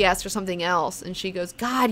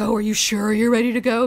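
pointedly sarcastic, raised voice; 3 semitones higher, 5 dB louder than usual. Recounting a story, the speaker acts out what she said to him, retelling her sarcasm. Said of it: "Being sarcastic".

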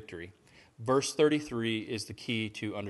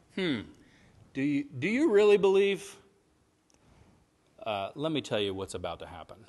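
play-acted heavy sarcasm, loud, swooping, needling; 4 semitones higher, 5 dB louder than usual. Acting out Jesus answering the disciples, with put-on sarcasm. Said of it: "I think it's sarcastic".

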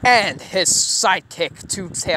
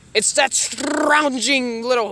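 plain

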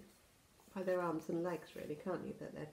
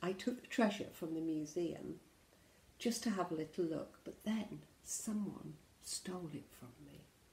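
ordinary delivery

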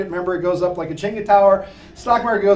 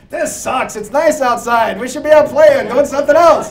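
put-on raised, high-pitched old man voice; 5 semitones higher, 5 dB louder than usual.

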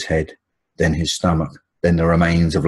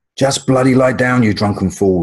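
put-on shrill, high-pitched, shrieking old woman voice; 7 semitones higher, 3 dB louder than usual. An old woman trying to sleep on deck gets trampled by passengers, shrieking. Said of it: "shrieked an old woman".

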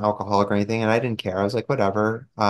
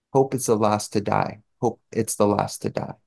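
put-on broken English accent. Retelling what a man said to them: imitating a broken English accent. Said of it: "in his broken English accent".

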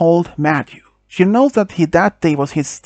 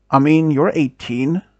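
usual speaking voice

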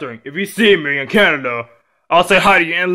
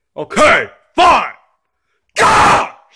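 screaming, shouting; 4 semitones higher, 4 dB louder than usual. A young man told to talk to Hann-Thang gives in: screaming. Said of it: "stop screaming".

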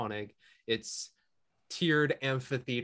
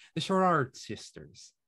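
put-on Irish-accented delivery; 3 semitones higher, 4 dB louder than usual. Repeating the sisters' name just read out, in an irish accent. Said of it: "If I can do it in an Irish accent".

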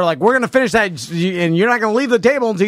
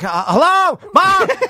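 put-on panicked, scared child voice, higher; 9 semitones higher than usual. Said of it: "I can hear the panic in their voice".

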